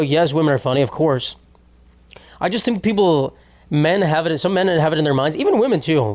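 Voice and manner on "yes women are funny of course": ordinary talk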